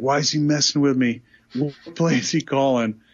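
mock fuming, fed-up, really pissed off angry outburst. Retelling how he reacted when the call went unheard: imitating someone getting really pissed. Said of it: "getting really pissed".

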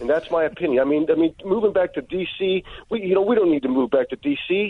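high-pitched angry rant. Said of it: "Angry Dennis".

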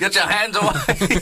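yelling, very high. Retelling how Klopp yelled at fans trying to high-five him: imitating Klopp yelling. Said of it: "He's yelling at them, going".

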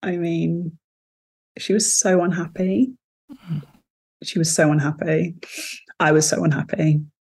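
close to crying. Asked what advice she would give her younger self, on the verge of tears. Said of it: "I'm going to cry".

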